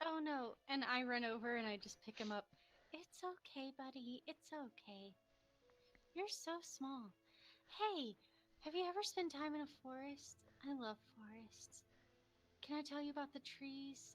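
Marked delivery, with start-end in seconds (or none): 2.9-14.1 gentle, soft, cooing, coddling half-whisper. Comforting a small creature held in the arms: half-whispering to it. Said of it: "I just kind of start whispering to him".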